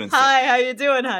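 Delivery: mock-confident, charming delivery. Recalling faking confidence, the speaker replays a greeting; faked-confidence greeting. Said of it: "that's exactly how I talk".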